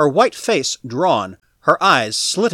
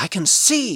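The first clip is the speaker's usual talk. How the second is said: hushed half-whisper; 2 semitones higher, 3 dB quieter than usual. Narrating a story, the reader gives Fowlon's repeated line, half-whispered. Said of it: "then he whispered it".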